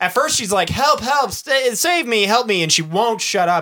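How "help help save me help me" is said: stretched, drawn-out, relentless mild cries. Retelling a film scene where a woman won't stop screaming, imitating screaming for help. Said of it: "she just does not stop screaming".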